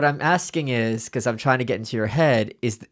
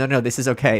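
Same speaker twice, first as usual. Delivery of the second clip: plain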